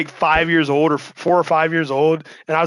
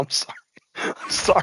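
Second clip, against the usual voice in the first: talking through laughter, quieter; 3 semitones lower, 7 dB quieter than usual. Apologizing while telling a story and unable to keep a straight face: laughing while talking. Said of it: "I can't keep a straight".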